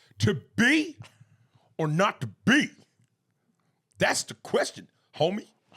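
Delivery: very loud, high, belted LA street voice.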